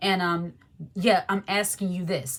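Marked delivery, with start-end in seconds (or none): 0.9-2.4 mock nasty, rude tone, lower. Retelling how people spoke to them: imitating a nasty tone. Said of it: "the way they came off was very nasty".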